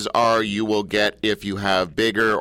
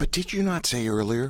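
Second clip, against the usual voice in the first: sudden, hushed half-whisper; 2 semitones higher, 5 dB quieter than usual. Questioning the other speaker about something said earlier, suddenly half-whispering. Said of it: "I don't know why I'm whispering all of a sudden".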